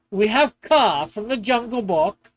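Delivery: normal talking voice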